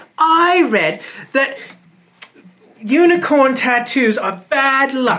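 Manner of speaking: oddly feminine put-on voice. A narrator voicing a time bandit not heard before, in a strangely female voice. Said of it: "It's a strangely female voice".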